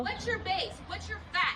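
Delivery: confrontational, heated, pressing, demanding tone. Demanding facts from a petitioner: yelling. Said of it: "Why are you yelling at me?".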